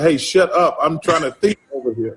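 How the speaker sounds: ordinary talk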